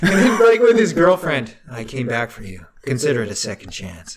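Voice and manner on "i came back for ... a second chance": mock deadpan, lower and quieter. Retelling how a movie character talks to his girlfriend, retelling a deadpan line. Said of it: "he's like deadpanning".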